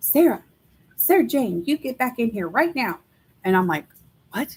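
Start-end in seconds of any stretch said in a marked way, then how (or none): 0.0-3.0 put-on high, calling grandmother voice. Describing a voice in the house that mimicked her grandma, imitating grandma hollering. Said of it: "he would do my grandma's voice and holler at me".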